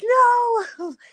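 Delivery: put-on very high, stretched-out shriek. Retelling finding a hornet on her towel: retelling her own scream.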